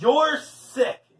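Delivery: exclaiming. Leslie answers Paul's repeated begging; exclaimed. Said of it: "exclaimed Leslie".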